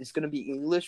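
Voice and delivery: ordinary talk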